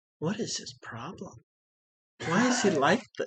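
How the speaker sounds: very quiet, half to oneself. Voicing Sapphire, whom a player hears talking to herself: speaking very quietly. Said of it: "you hear very quietly from Sapphire".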